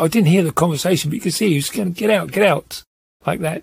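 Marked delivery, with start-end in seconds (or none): 1.9-2.8 put-on angry voice. Retelling how a man ordered two passengers out, imitating an angry order. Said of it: "sort of like angrily".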